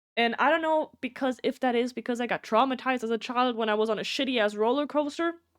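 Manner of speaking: ordinary talk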